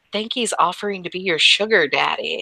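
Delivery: hushed whisper. In a role-play scene, one character whispering to another, whispering. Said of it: "She whispers".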